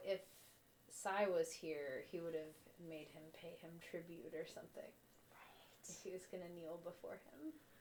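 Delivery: very quiet, hushed whispered aside. In a role-play, the character turns to a companion once another is out of earshot: whispering. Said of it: "like whispering".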